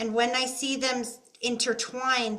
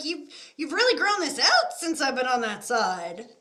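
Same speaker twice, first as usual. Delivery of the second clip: put-on playful, teasing, sing-song grandma voice; 3 semitones higher than usual. Retelling what a late grandmother says about a grandson's beard: imitating grandma teasing. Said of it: "She's kinda teasing you about your beard".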